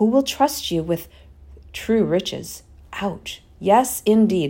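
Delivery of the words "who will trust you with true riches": ordinary delivery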